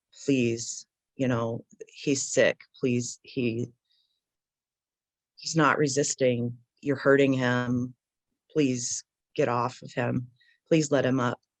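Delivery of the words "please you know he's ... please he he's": ordinary delivery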